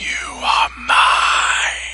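soft, breathy, snake-like hissing whisper. Narrator voices a figure whispering in the listener's ear, hissing whisper. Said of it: "with the voice like the hissing of 100 snakes".

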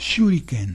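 shuriken with stress on first syllable shu. Explaining Spanish accent marks, saying the word as esdrújula: stress on SHU in Shuriken. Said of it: "esta palabra la estoy pronunciando como esdrújula".

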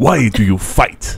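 aggressive, warrior-like, combative delivery. Speaker imitates how the character Pantheon talks, imitating Pantheon, mock-aggressive. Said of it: "He's very aggressive".

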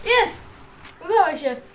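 excited, high, loud, triumphant victory cheer.

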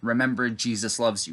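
usual speaking voice

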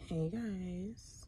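very hushed, soft, deep man-like voice. Greeting viewers at six in the morning; voice sounding like a man. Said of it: "I sound like a man".

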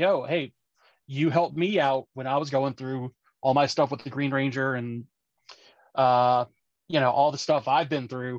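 ordinary talk, nothing marked

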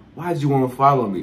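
ordinary talk

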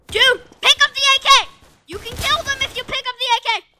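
high loud yelling. During a firefight in a game, yelling at another player. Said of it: "I'm yelling at".

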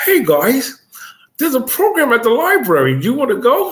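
odd put-on voice, high, swooping, sing-song. Telling a story about being sixteen, imitating Chucky's voice. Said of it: "Why do you make his voice sound like that?".

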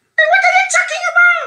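play-acted shrieking preacher voice, swooping and rising throughout. Mocking a man's reply about a church, imitate his shrieking. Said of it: "Let me shriek like he shrieks".

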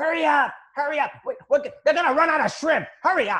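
put-on yelling. Retelling a husband at a cruise cafe hurrying his wife: imitating a husband yelling. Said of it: "he's yelling".

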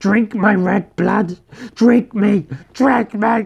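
very loud, high, ecstatic, frenzied cry. Bleeding from his throat, he calls to the Count, crying out in frenzied joy. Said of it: "he cried in a frenzied joy".

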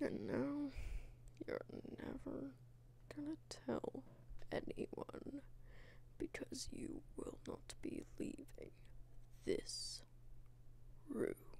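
sinister, menacing, hushed whisper.

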